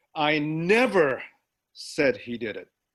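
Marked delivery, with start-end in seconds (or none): 0.4-1.2 'never' emphasized. Showing how stress changes meaning, the speaker says sentence two with stress on 'never'. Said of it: "Sentence two".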